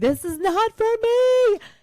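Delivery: freaked-out, very high, loud, drawn-out yell. Recounting freaking out up top on a boat hit by a wave, retelling her own yell. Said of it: "a video of me yelling".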